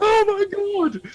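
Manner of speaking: imitated screaming. Retelling people in a trailer getting a weapon: imitating people screaming. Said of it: "people screaming".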